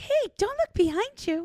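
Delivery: very high-pitched haunted-doll voice. Playing a haunted doll in a scenario, speaker uses a really high-pitched voice. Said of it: "With like a really high pitched voice".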